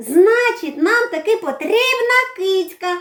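glad, delighted, joyful, high outburst. Narrating Dasyk answering his dad while they look for a mouse, joyful exclamation. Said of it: "радісно вигукнув Дасик".

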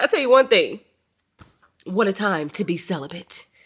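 near-tearful, on the edge of crying, voice breaking. Talking to the camera about a bad morning, close to tears. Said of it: "I'm about to cry again".

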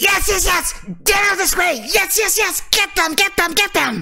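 very high, rapid, squeaky rat-creature cry. Narrating a game, a furry creature comes around the corner: creature crying out. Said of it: "you hear it cry out".

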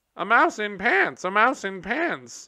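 put-on very high, shrill squealing of children. Reading a story, the narrator voices the children mocking a mouse, squealing. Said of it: "they all squealed".

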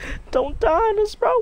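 mock, put-on wailing.

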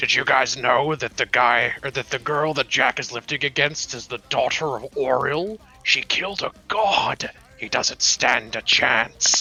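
whisper-shouting. Playing a character whispering to the elves to intimidate a rival, loud whisper. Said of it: "loudly whisper, like whisper shouting".

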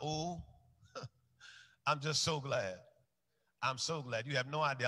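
fighting back tears. Giving a personal testimony about faith, fighting back tears. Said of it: "I'm fighting back tears".

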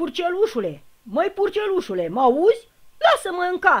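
very loud, very high calling shout. The big bad wolf calls to the piglet in its brick house, shouting. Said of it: "a strigat lupul".

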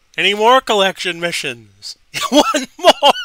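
giggly, high, swooping voice through giggles. Opening card packs on stream, speaker giggling like crazy. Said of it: "I'm giggling like crazy".

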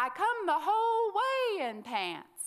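shrill, very loud, very high, swooping drawn-out yell. Retelling how a wife answered her husband from the boat: imitating her yelling back. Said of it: "she yelled back".

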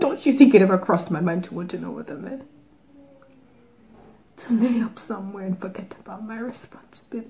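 hushed, quiet, theatrical, dramatic film-style delivery. Speaking to Troy in a reenacted film monologue. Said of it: "and I'm about to reenact [name]'s monologue from the movie [name]".

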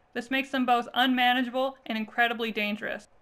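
plain

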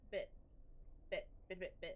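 stuck repeating a word. Speaker moving the microphone away, getting stuck on one word: stuttering, getting stuck. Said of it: "I love stuttering. I'm getting stuck".

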